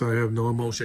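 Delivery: dead flat, emotionless, robotic monotone. Mocking an actress's delivery in a show: emotionless robotic Florence Pugh voice. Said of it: "Scarlett Johansson didn't talk like this".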